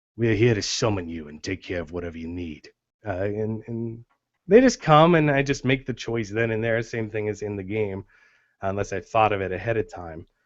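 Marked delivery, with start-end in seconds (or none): 0.2-2.7 deep, low Cockney accent. Showing the voice used for the Lord of the Monkeys: deep Cockney accent. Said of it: "the deep Cockney".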